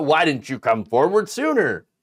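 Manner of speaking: usual speaking voice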